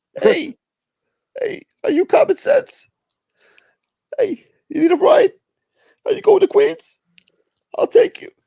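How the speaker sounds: loud, very high-pitched squeak. Pretending A-Light picks the listener up from the airport, doing a squeaky A-Light voice. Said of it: "I got to do more squeaky".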